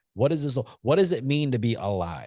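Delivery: normal talking voice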